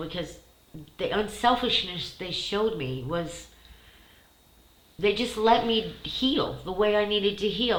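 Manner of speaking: moved, heartfelt, emotional, emotion rising through. Recalling people who took them in while they were wounded, getting emotional. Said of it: "I'm getting emotional".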